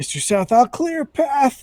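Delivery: frantic, panicked, high-pitched yell. [name], panicked at the door, calls to Mr. South before charging forward; panicked yell. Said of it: "He's gonna yell".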